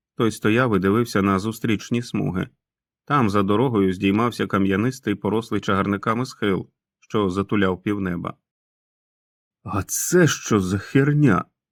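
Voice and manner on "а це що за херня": whispered, each word drawn out very slowly. A narrator reads a lad's line as he stares across the road, whispered. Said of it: "прошепотів пацан".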